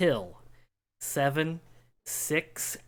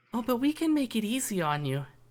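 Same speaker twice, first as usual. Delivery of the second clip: high, giggling voice, close to the ear; 8 semitones higher than usual. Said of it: "you hear the giggle".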